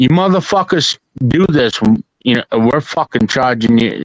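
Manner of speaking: put-on, blunt, aggressive, hard-nosed tough talk, no softening. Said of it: "or you can tell 'em like this".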